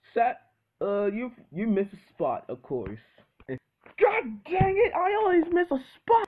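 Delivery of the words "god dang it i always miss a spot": furious angry outburst, much higher pitch. In a kitchen skit, after being told of a missed spot, angry outburst. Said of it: "I'm so angry right now!".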